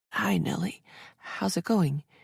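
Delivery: hesitant, tentative, hushed voice. Finally answering a long-ringing phone call, in a tentative, hushed voice. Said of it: "answered in a tentative, hushed voice".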